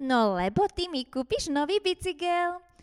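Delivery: gleeful, delighted cry with pitch climbing. A little girl answers her mother's question: exclaiming happily. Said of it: "zvolala šťastne Barborka".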